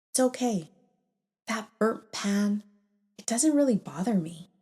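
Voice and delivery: steady, calm, even and unbothered. Retelling one's own reply to a father's criticism: retelling own calm slow words. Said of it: "I very calmly and very slowly said".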